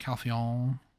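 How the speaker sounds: put-on, slight, somewhat bad French accent. Saying a name in a slight, bad French accent. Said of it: "I just kind of give a slight French accent".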